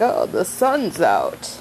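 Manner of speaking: odd put-on character voice, swooping and drawn-out. Retelling a story, the speaker voices him waking up in a weird put-on voice. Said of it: "that was a weird voice".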